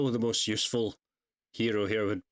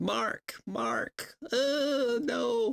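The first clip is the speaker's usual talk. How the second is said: put-on voice, very high pitch, very slow pace. Showing the other speaker a not-yet-good Eve impression. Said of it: "that's my Eve impression".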